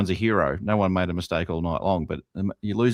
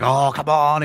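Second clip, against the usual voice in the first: elated, loud, high, excited celebratory whoop; 9 semitones higher, 7 dB louder than usual. Retelling a player's reaction after kicking a goal: imitating excited celebration. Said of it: "he's up and about".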